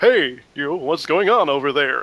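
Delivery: announcer-style narrator voice. Showing the voice used for several of their characters, Starbarians narrator announcer voice. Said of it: "That's a great voice".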